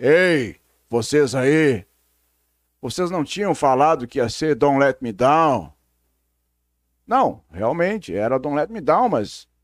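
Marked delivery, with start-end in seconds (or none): 0.0-5.7 god-like voice heard as if over a PA speaker. Retelling how a voice suddenly came from a box: voice of god from a box. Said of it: "que parece a voz de Deus".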